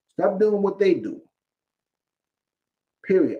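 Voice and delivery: impassioned, preacher-style crying out. Preaching to the listeners, begging them to stop: crying aloud. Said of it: "I'm crying aloud saying that".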